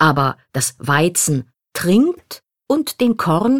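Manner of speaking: swapped articles "das" and "den" stressed slowly.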